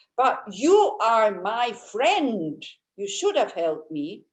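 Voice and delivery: wounded, reproachful, angry and hurt accusing tone. Retelling a friend's accusation: imitating an angry, hurt friend. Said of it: "said it like this".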